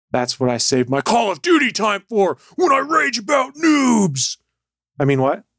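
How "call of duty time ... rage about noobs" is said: high, swooping, swinging macho blustering rant. Speaker chatting about video games, in a Macho Man Randy Savage voice. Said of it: "Why did you sound like Macho Man Randy Savage?".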